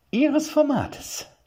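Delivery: through clenched teeth. Narrator reads a woman answering an arrogant knight, through clenched teeth. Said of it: "mit zusammengekniffenen Zähnen".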